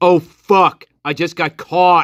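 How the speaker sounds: play-acted guilty, just-caught-out delivery. Comparing two suspects' interviews, imitating a just-got-caught tone. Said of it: "it's the same tone of voice".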